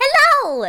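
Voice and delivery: very high, very loud cat-folk voice. Voicing a little tabaxi shopkeeper greeting the players: tabaxi shopkeeper voice. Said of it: "the little tabaxi's gonna look up ... and they go".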